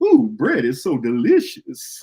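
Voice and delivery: put-on voice, pitched high with swooping pitch. Speaker says what hearing the phrase makes him want to say, Mama Klump voice. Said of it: "say it in like Mama Clump voice".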